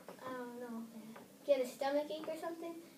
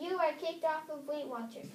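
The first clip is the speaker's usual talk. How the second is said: ordinary delivery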